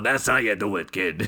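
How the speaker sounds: put-on wizened old man voice, as if chewing a cigar. Imagining how the film's directors all sound, wizened fifty-year-old man with cigar. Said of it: "wizened fifty-year-old men with cigars in their mouths going".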